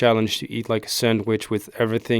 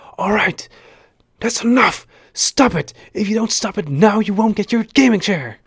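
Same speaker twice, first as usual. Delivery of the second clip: mock very high, shrill, fed-up yell; 11 semitones higher, 4 dB louder than usual. Retelling what she yelled at him for annoying her, retelling a yell. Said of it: "she yelled at me".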